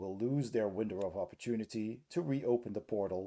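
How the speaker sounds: plain reading voice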